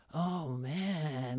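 laid-back stoner drawl, "man" drawn out. Retelling an athlete's reply to an interviewer: imitating a stoner voice. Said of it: "she got into her stoner mode".

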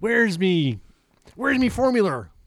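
sing-song, high, swooping cartoon character voice. Retelling a movie scene, quoting the boss about the missing bottle: Mr. Krabs voice. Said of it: "I can't do it right now. My, my voice is".

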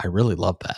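said very quietly, hushed. Recalling a remark to a partner at the end of watching it, very quietly. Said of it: "I very quietly said".

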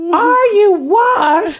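shrill, ear-splitting, very high, very loud scream. Speaker retells a man screaming from a car on the highway: imitating someone screaming. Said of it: "he was screaming and half his body hanging".

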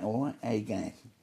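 put-on accent from Plaistow. Recalling being a kid out of Plaistow in theatre, in a Plaistow kid accent. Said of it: "I'm a kid out of Plasto, you know, talks like that".

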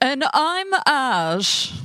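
overdone butler voice. Introducing himself again after being told to up his butler impression, in a bigger butler voice. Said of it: "I think you need to up it a little bit".

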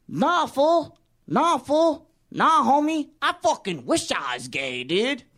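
put-on voice of a man. Acting out what a man says, imitating his voice. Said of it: "I gotta do the voice, because this is what he sounds like".

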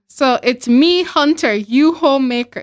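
primitive, stripped-down caveman-style voice. Imitating how the husband in a story talked: caveman talk. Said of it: "This is legit how he was talking".

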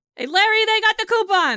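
shrill yell, very high-pitched, carrying far. A man leans over his shoulder and calls back to the kitchen: yelling toward the kitchen. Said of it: "and he yells".

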